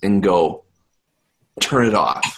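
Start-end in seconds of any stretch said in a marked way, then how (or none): 1.6-2.4 whispering in a character voice. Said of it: "whisper in Aaron's ear".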